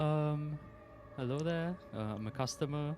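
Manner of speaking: humble, hesitant delivery. Playing a character approaching a shopkeeper: extremely humble. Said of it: "Extremely humbly, I'm gonna be like".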